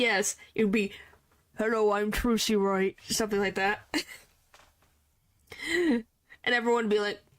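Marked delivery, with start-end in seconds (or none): 1.6-3.0 deep, low character voice, dropped way down. Imagining voicing Trucy Wright while testifying, saying hello in a deep Trucy Wright voice. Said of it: "most voices for Trucy are not that low".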